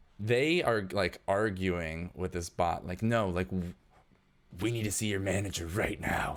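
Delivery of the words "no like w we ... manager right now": weird, gruff character voice. Voicing a robed man arguing with a bot: weird gruff voice. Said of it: "He's got kind of a weird, gruff voice".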